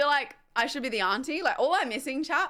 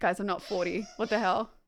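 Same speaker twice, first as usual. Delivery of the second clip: ordinary talk, nothing marked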